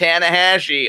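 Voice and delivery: put-on American Upper Midwest accent. Cringing while imitating someone's bad pronunciation, imitating a hard Wisconsin-Minnesota-Dakotas accent. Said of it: "I cringe just even imitating it ... like Wisconsin, Minnesota, the Dakotas, like that accent. Hard accent though".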